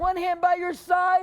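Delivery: shouted drill-style delivery.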